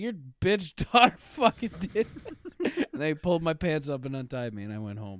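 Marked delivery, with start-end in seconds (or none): 0.0-2.1 high, loud, laughing and indignant. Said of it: "And I was like".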